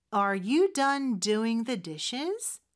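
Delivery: very slow delivery, rising question tune at end.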